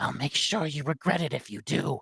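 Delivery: menacing, dangerous, hushed whisper. Narrating a story, voicing a woman warning the listener not to tell: dangerous whisper. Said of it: "She whispers, like in a dangerous tone".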